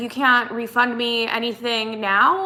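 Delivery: plain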